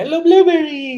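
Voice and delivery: ridiculous shrill silly voice, very high and loud. Retelling talking to a scared dog at the shelter: imitating a high-pitched silly voice. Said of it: "talking to him in a really pitched voice and ridiculous".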